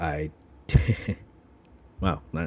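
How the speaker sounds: getting emotional, choked up. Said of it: "Getting a little emotional here".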